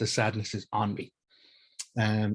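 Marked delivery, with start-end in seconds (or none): none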